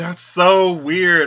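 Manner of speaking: startled exclamation.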